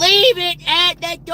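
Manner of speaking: put-on scream. Retelling how she answered through the door, imitating her screaming. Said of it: "And it was like screaming".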